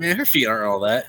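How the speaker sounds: acted, deflated, disappointed, let-down tone. Retelling a remark made to a friend after she walked out: imitating a disappointed remark. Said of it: "the way he said it, he was so disappointed".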